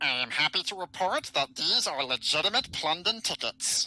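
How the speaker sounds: nasal blocked-nose voice. Playing a figure reporting on the ticket inspection, in a nasal blocked-nose voice. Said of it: "Did you actually like block one of your noses?".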